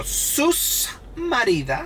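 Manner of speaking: put-on high, slow Dominican accent, S on sus. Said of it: "when they wanna accentuate it, they go".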